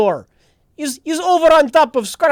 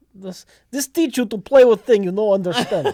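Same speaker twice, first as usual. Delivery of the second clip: clumsy, terrible fake Russian accent; 3 semitones lower than usual. Voicing a character in a role-play scene, in a terrible russian accent. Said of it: "That Russian accent is terrible".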